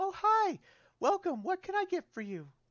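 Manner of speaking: very high, light and airy voice. Game narrator voicing someone greeting a visitor who opens the door: light, airy voice. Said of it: "a light, airy voice".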